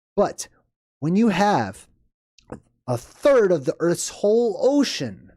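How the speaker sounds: high, swooping, excited yelling. Speaker talking into the mic, yelling excitedly. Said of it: "I'm sorry I'm yelling into the mic".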